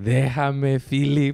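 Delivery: put-on grandma voice in Spanish. Retelling how grandma reacted while being rolled over: imitating grandma. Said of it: "going like".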